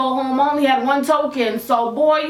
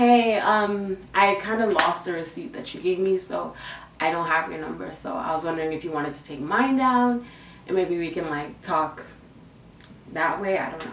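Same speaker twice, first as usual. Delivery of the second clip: timid, bashful, very low, soft voice; 7 semitones lower, 7 dB quieter than usual. Speaker retells approaching someone at the bus shelter, acting out shy past self. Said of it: "With my little shy".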